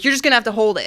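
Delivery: mock angry screaming. Retelling a fight in the car, quoting him screaming at her, retelling angry screaming. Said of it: "he's screaming at me".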